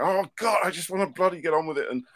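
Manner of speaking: raging outburst. Describing what the speaker's partner has seen during the illness: imitating own raging. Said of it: "my partner Alice has seen me raging and going".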